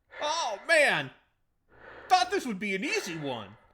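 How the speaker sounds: frantic, very high, very loud panicked screaming. Acting out a game hero running from a boulder: mock panic. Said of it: "pretend you're running from a boulder".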